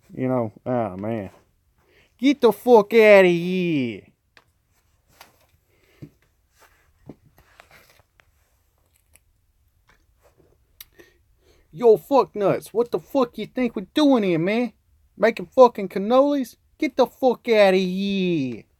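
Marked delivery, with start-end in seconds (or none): 2.2-18.6 put-on New York accent, very high, stretched. Doing the accent again because someone asked for it, in a new york accent. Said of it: "that New York accent again".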